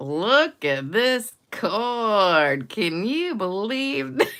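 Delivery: put-on very slow drunk drawl. Retelling a half-speed video gag late at night, talking really, really slow. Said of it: "really, really slow".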